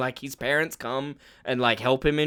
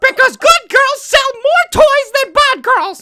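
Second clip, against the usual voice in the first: put-on mocking voice, higher and louder; 12 dB louder than usual. Imitating Disney on what characters are allowed to be: imitating Disney. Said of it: "That's scary, that impression".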